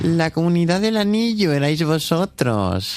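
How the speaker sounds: low, dropped character voice. In a quiz round, contestant [name] must guess who said the quote, imitating Roberto Raona. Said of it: "la imitación de Roberto Raona".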